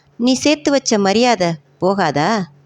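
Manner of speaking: ordinary delivery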